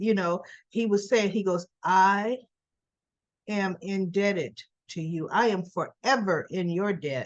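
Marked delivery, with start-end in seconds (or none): 1.8-7.3 slow, darkly ominous delivery. Retelling a scene where a character stands up and speaks: imitating an ominous tone. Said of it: "he's talking a little ominous to me".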